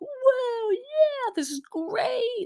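play-acted very high, very slow, super loud whooping yell. Act out Joe ziplining and having fun, imitating a super loud, fun yell. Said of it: "He's yelling like super loud".

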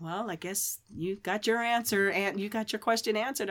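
ordinary delivery

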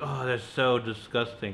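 ordinary talk, nothing marked

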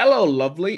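failed put-on British accent, high and loud. Joking about Tilda Swinton playing anyone, attempting a bad British accent. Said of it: "I can't do a British accent".

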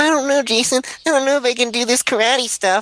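very high, whiny voice. Imitating a character the speaker found really whiny: whiny Billy impression. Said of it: "Billy seemed, like, really whiny".

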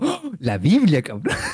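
put-on slow, excited, wowed exclamation. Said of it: "Next vio el libro del mal y dijo".

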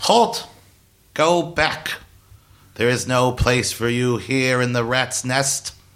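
tiny, squeaky little pipsqueak voice. A voice calls out from the city wall to the returning party, squeaky pipsqueak voice. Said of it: "sort of pipsqueaky voice calls out to you".

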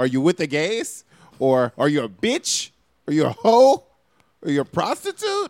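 loud, belted, swooping sing-song Irish accent. Discussing what to call people, a host asks questions in an Irish accent. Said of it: "Are you Irish right now? Where is this accent coming from?".

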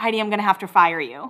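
ordinary talk, nothing marked

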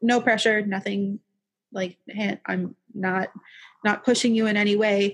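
ordinary talk

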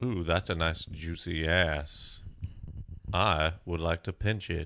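slow drawl, every word stretched out. Joking about accusations, doing a Morgan Freeman impression. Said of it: "that's a pretty good Morgan Freeman".

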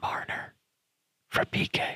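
whispered, hushed, barely audible. Voicing an idea too hard to say aloud, whispered. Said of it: "I will whisper it".

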